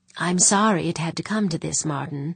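plain reading voice

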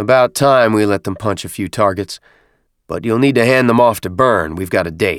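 plain

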